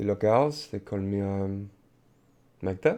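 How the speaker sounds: put-on French-accented English. In an improvised scene, a character answers when asked their name, in a french accent. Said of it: "say that in a non-French accent".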